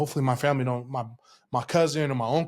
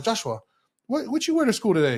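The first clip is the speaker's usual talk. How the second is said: put-on Samoan accent, much higher pitch; 8 semitones higher than usual. Retelling his grandma's words when she came home, imitating her Samoan accent. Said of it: "My grandma has a little Samoan accent".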